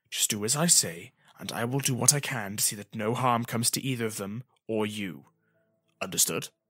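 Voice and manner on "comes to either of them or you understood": ordinary delivery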